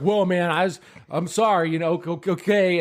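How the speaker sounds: flustered, stumbling stammer, backpedaling. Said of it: "he's stumbling his fucking words".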